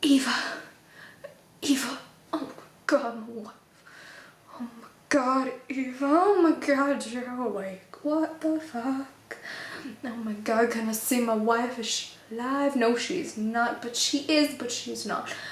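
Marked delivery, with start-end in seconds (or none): 0.0-12.8 big, dramatic character reading. Acting out a scene as David, the speaker gives a dramatic David rendition. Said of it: "that was my dramatic rendition".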